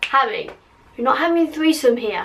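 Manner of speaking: ordinary delivery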